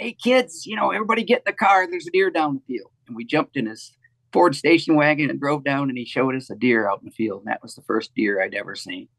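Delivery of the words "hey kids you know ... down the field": put-on high calling-out voice, half yelling. Retelling how dad came home calling the family to the car: imitating dad kinda yelling. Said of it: "kinda yelling at the family".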